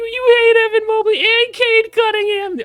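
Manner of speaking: very high, very loud, shrill squeal. Imitating internet commenters complaining about a player ranking: Morty voice. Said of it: "They sound like Morty".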